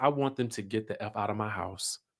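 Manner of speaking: very quiet, hushed, barely audible, under the breath. Retelling what the wife said to her husband: imitating someone saying it quietly. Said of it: "she quietly says".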